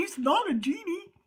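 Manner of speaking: soft, silly, mocking put-on goofy voice. Mimicking what they say whenever asked for a prayer: mocking goofy voice. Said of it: "That's my goofy voice".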